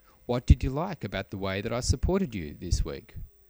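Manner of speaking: ordinary talk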